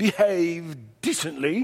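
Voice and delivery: put-on archaic, old-fashioned biblical-style English. Reading a Bible command aloud, showing an old King James English accent. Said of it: "in the old King James English accent".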